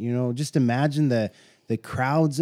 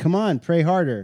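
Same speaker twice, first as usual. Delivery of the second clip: mock taunting voice, pitched higher; 5 semitones higher, 3 dB louder than usual. Retelling how Elijah taunted the praying prophets: imitating someone egging others on. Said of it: "he was egging them on".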